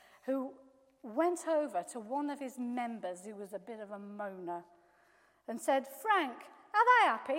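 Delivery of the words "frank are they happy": very loud, high-pitched put-on Yorkshire accent. Telling a story, voicing a Yorkshire pastor speaking to a member, Yorkshire accent. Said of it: "I've adapted it into Yorkshire".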